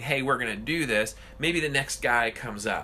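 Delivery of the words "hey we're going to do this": usual speaking voice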